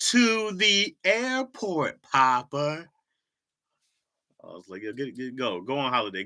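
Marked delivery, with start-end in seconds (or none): 0.0-2.9 talking down, very slow and very high-pitched. Quoting a woman talking down to him, slowed down as if to someone dumb. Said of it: "she slowed it down, like I couldn't comprehend".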